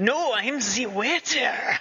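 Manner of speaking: terrible put-on French accent. Recounting a character infiltrating a restaurant, a reviewer quotes him in horrible French accent.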